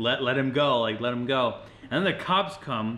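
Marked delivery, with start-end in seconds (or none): none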